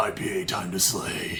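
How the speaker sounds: very low-pitched voice. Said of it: "in a very low-pitched voice".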